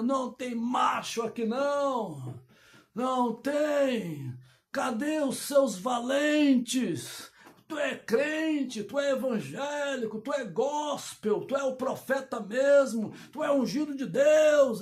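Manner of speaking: mock, goading, drawn-out taunting giant's jeer. Retelling a giant taunting Israel's army, acting out a giant's shouting.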